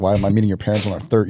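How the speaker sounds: put-on angry, pissed-off tone. Retelling what a date said about meeting his parents: imitating someone pissed off.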